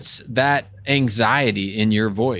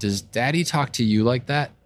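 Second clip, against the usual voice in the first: put-on softest, calmest, gentle voice. Retelling kneeling down to speak to her, in softest, calmest voice. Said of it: "in my softest, most calm voice possible".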